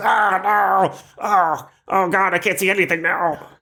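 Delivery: shrill, pained goblin wail, very high pitch. Narrating a scene, the speaker voices a goblin whose eyes just popped, crying out in pain. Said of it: "He goes".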